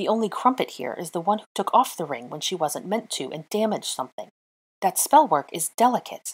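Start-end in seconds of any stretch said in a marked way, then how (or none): none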